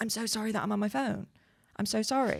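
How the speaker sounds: acted-out, flustered, panicky, frantic voice. Retelling how she apologized for being on her phone: imitating someone panicky. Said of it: "Oh, panicky".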